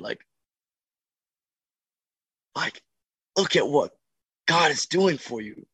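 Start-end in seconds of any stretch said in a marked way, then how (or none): 3.4-5.5 high-pitched, loud yell. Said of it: "just yell at this kid".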